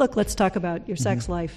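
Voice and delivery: normal talking voice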